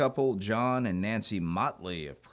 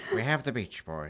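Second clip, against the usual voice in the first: showman host voice gone villainous and scheming; 3 semitones higher than usual. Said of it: "making him sound like Doctor Evil".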